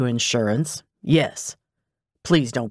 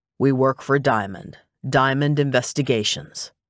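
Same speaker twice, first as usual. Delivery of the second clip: ordinary delivery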